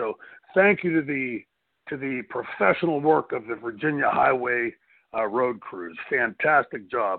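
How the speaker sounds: oozing, insincere, heavily dripping sarcastic tone. Thanking the highway road crews after a ten-hour drive back through snow: heavy sarcasm. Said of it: "with all the sarcasm I could possibly ooze".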